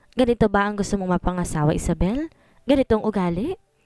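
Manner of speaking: plain reading voice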